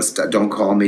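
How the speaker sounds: normal talking voice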